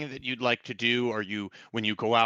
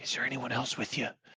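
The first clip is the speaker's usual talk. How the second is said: hushed, secretive whisper; 6 dB quieter than usual. Voicing a figure hiding around the corner: whisper. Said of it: "Why are you whispering?".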